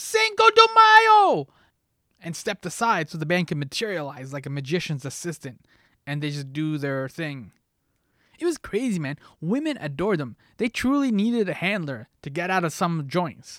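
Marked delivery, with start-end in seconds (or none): 0.0-1.5 very shrill, loud, high-pitched top-of-the-lungs yell. Retelling flinging bar doors open for the band: retelling a yell at the top of lungs. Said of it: "I just yelled at the top of my lungs".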